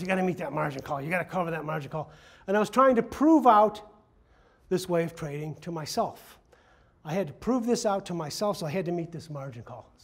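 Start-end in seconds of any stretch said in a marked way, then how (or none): 0.0-2.1 gruff, rushed man's voice. Recalling a phone call where he convinced you to meet a margin call, in Mike Epstein's gruff voice. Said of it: "in his gruff voice".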